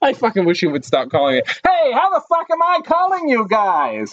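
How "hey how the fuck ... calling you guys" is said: put-on very high, swooping old-time newsreel announcer voice. Voicing a caller from World War Two on the phone: 1940s newsreel announcer voice. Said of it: "why do you talk like a newsreel guy".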